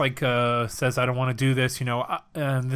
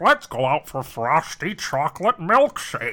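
animated cartoon voice with wide, swooping pitch swings; 3 semitones higher, 4 dB louder than usual. Recalling a cartoon line in a Homer Simpson impression. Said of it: "you know how he was like".

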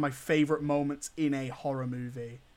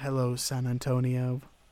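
silky, smooth, flirty put-on radio-host voice; 2 semitones lower than usual. Retelling the film's radio presenter greeting listeners: imitating a smooth, flirty radio presenter. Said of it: "she's so smooth and flirty".

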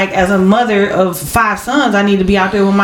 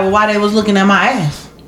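ordinary delivery

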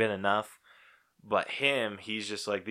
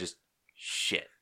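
put-on very quiet voice, lower pitch; 2 semitones lower, 8 dB quieter than usual. Retelling the reaction to a film's opening shot, retelling a super quiet curse. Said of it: "You're just like super quiet".

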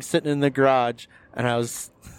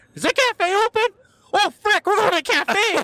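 put-on thrilled, excited shriek, very high. Retelling a road trip stop, imitating Seth's excited scream. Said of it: "He just screams out".

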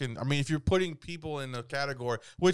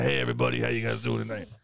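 put-on raspy voice, lower pitch; 3 semitones lower than usual. Retelling doing comedy while sick, imitating own raspy voice. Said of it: "I've had a raspy ass voice".

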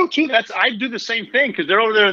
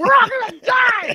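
very high, drawn-out, panicked shrieking scream. Imitating a panicking pilot during turbulence: imitating a screaming pilot. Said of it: "as opposed to screaming".

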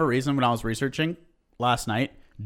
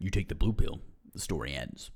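hushed, quiet put-on character voice; 9 semitones lower, 9 dB quieter than usual. Trying out a movie quote, in a Morpheus voice. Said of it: "I was into your Morpheus voice".

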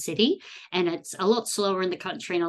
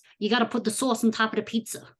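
fast, put-on Boston accent; 4 semitones higher than usual. Asked to do an American accent, speaker tries a Boston accent. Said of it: "I think it's a Boston accent".

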